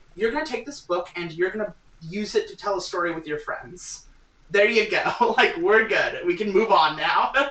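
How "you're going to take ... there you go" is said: put-on pitched-up old mouse character voice. Showing how an old mouse would explain a role-playing game: old mouse explaining. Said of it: "how would an old mouse explain to you what an R P G is".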